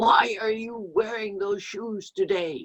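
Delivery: high, critical, disapproving, fault-finding tone. Acting out the traditional way of someone using negative critical parent: critical parent voice. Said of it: "In this kind of a posture and a voice. Of course, I'm acting it now".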